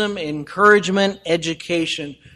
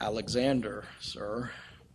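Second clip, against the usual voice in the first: put-on meek tone, much quieter, lower; 7 semitones lower, 16 dB quieter than usual. Retelling a young man answering a general; imitating a meek reply. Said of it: "very meekly said".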